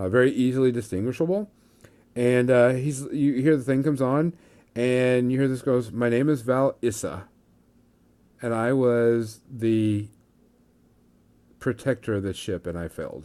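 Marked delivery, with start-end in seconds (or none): 5.9-13.2 put-on voice of an aged old man. Voicing an old Jedi on a holocron to the players: old Jedi man voice. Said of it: "you hear this voice, and you see this old man".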